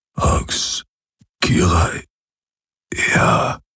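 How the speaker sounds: faint murmur, trailing off and fading into silence. He answers her doubtful question, murmuring, growing fainter. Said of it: "murmelte er".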